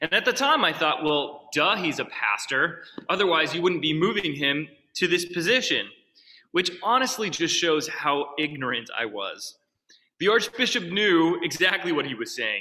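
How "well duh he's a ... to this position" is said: plain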